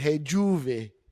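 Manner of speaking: put-on New Orleans accent. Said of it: "I wrote it with a New Orleans accent".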